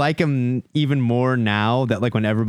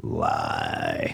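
very low, soft put-on lion-like cat voice. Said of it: "Lion Cat would be like".

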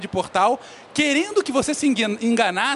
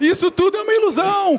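high-pitched, yelled-out shout; 9 semitones higher, 4 dB louder than usual. Telling a comic story about a young man, acting out a shout.

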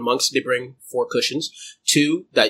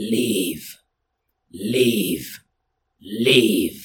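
rising volume with each repeat; 2 semitones lower than usual. In a game, the voice speaks to a character clutching his head; growing louder. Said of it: "Louder and louder and louder".

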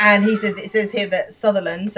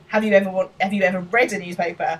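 usual speaking voice

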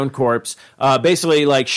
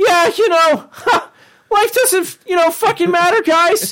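very high, scoffing, mocking teenage kid voice. Imitating a nihilistic thirteen-year-old, Morty, saying life doesn't matter: imitating Morty. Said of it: "and he's like".

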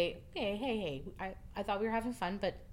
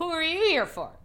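put-on very high, very loud, tipsy drunken voice; 9 semitones higher, 9 dB louder than usual. Retelling what a drunk girl asked at the end of the night, imitating drunken speech. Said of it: "very drunkenly and who knows".

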